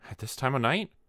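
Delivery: nervous. A wife on the stairs asks her husband who is knocking, nervous. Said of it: "she asked nervously".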